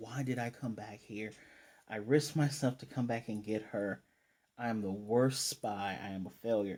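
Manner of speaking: ordinary talk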